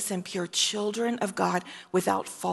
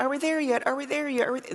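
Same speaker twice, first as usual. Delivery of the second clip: mock whining, complaining child voice, higher pitch; 6 semitones higher than usual. Imitating little children who complain: imitating complaining children. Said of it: "little children and you're like, so, you know, complaining".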